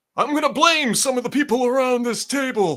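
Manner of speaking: weak, high mob-boss voice. Quoting a line from The Godfather: lame Marlon Brando impression. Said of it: "that was my lame attempt at Brando".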